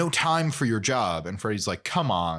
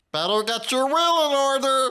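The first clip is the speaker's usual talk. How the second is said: mock cheery tiny psychic voice, higher and louder; 5 dB louder than usual. Acting out a tiny psychic shrunk down in post: put-on cheerful tiny psychic voice. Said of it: "They're, like, very cheerful".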